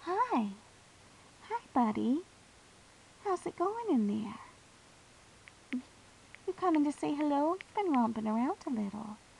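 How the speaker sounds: gentle, kindly, easy soft-spoken voice. Showing how to talk to a new pig in its cage, very soft voice. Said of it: "talk to them in a very soft voice, kind of like this".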